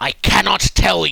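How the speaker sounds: loud, rough, growled dragon voice. Narrating a game, voicing the dragon the players try to persuade: loud dragon voice. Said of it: "as it says that, loudly".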